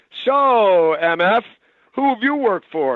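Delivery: play-acted sarcastic, needling tone. Recounting what someone asked in the dressing room, imitating a sarcastic question. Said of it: "Steven says sarcastically".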